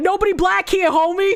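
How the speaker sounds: put-on Spanish accent.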